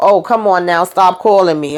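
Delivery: ordinary delivery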